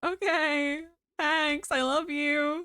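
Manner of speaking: tearful, high-pitched, drawn-out, crying through the words. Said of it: "I'm actually crying".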